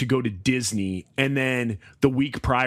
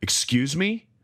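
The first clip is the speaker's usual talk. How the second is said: deeper, lower-pitched voice. Retelling how he answers his kids when they talk back: imitating own deeper voice. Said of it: "the tone of my voice would get deeper".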